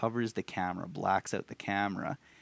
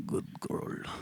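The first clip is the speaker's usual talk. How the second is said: put-on creepy creature voice, quieter. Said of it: "He does the coolest voice ever".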